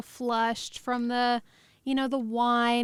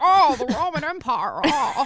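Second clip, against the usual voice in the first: very slow drawl, raised voice; 3 semitones higher, 7 dB louder than usual. Repeating a line about the Roman Empire in a Jimmy Stewart impression. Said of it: "my, uh, Jimmy Stewart impression".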